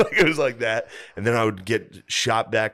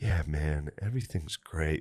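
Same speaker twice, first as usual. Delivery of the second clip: low, flat monotone with no rise in pitch; 6 semitones lower, 8 dB quieter than usual. Act out how he would talk every once in a while as you hallucinated, in Butterly's real monotone voice. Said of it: "Like this real monotone thing".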